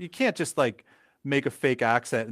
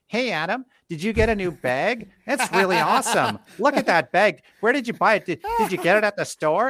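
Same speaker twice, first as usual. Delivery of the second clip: loud, high-pitched, put-on North American accent; 8 semitones higher, 5 dB louder than usual. Retelling how a coworker imitated the speaker's accent, coworker mimicking speaker's accent. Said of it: "this is how they would imitate my accent".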